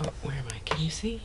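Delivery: soft, unvoiced whispered aside.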